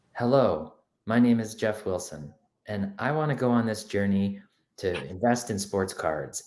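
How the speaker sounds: calm, slightly suave put-on voice. Describing a sports-card investor's intro video, imitating Jeff Wilson, calm and suave. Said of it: "he's all like calm and like a little suave".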